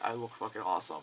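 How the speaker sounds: ordinary talk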